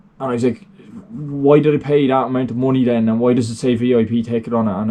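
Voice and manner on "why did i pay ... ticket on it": ordinary delivery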